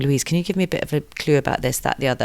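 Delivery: put-on whisper. Retelling how people come up asking about menopause: imitating someone whispering. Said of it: "they kind of whisper to me going".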